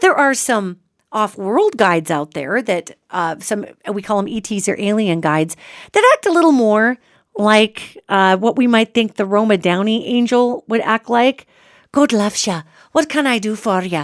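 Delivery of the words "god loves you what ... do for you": clumsy, really bad put-on Irish brogue. Imitating a kindly angel like the one on Touched by an Angel: really bad Irish accent. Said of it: "giving these angels an Irish accent, a really bad one".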